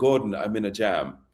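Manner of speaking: put-on British accent. Quoting a man who phoned the speaker in a jam, british accent. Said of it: "He had his British accent".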